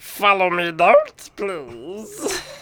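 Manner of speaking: high, loud, swooping, sing-song, animated creature voice. Asked how Yoda would say don't follow me; Yoda impression. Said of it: "How would Yoda say don't follow me?".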